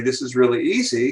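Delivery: ordinary talk, nothing marked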